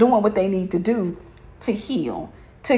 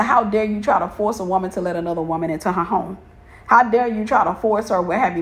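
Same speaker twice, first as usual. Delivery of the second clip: normal talking voice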